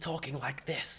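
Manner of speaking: very quiet, hushed half-whisper, very soft. Contrasting a full-bodied vocal with a softer tone: hushed, half-whisper. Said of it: "this hushed tone that isn't a full-bodied, intense vocal... It's not quite a whisper, it's like halfway between".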